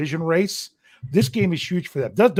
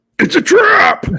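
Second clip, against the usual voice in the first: very high, loud yelled cry; 7 dB louder than usual. Taking a turn at the Admiral Ackbar impression. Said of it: "who's got the better impersonation of this".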